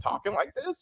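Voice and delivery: mock exasperation, high, soft rise of disbelief.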